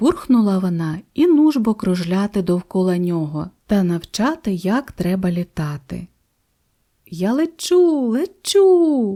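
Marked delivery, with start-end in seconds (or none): 7.1-9.2 gleeful, high, delighted shout. Narrator reads the little dolphin finding he can fly, shouting in delight. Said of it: "у захваті заволав дельфінчик".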